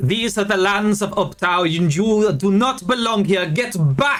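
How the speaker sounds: high-pitched shouting. A stranger orders outsiders off his lands, yelling. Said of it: "And he's still yelling".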